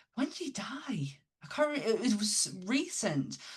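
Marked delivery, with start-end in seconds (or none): 0.2-2.0 high, breathless whisper. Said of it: "I was like".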